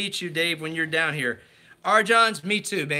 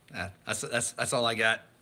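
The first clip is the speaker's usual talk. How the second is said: ordinary talk, nothing marked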